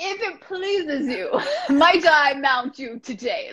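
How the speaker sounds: put-on old-fashioned British speech. Speaker demonstrates an overly formal way to approach a horse, very old-fashioned british. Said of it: "Like very old British".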